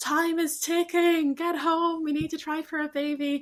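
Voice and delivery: frantic, high, freaked-out voice. Retelling telling someone to get home: imitating own past freaking out. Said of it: "freaking out, being like".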